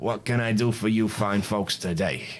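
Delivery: raspy, rasping voice. Voicing an older shopkeeper greeting customers: raspy voice. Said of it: "he says with a raspy voice".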